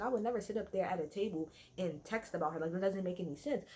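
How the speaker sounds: ordinary delivery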